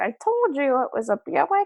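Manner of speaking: put-on, very high old-lady voice. Retelling a car commercial's punchline: Buick commercial old lady impression. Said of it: "do that impression".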